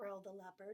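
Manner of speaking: plain reading voice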